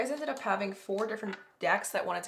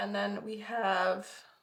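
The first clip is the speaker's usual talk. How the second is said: voice cracking and breaking, slower. Speaker introducing card decks to viewers, voice cracking. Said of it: "my voice cracked".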